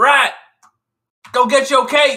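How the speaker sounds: high-pitched yell. Calling out in character to a rat during a fight: yelling out. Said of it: "I'm gonna yell out".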